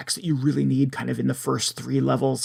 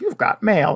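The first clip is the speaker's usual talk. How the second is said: eerie, creepy, pitched-up computer machine voice; 6 semitones higher, 4 dB louder than usual. Describing a game's little computer that announces mail: creepy computer voice. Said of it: "in a creepy voice".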